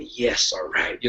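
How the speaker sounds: hushed, whispered, cheerful murmur under the breath. Describing how they watch a fight quietly, the speaker retells an under-breath murmur. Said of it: "under my breath".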